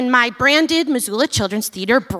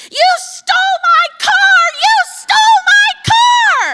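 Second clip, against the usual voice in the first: very high, drawn-out shriek with "car" stretched; 7 dB louder than usual. Retelling how a woman on the sidewalk screamed at the speaker: imitating a woman screaming. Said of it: "she's screaming".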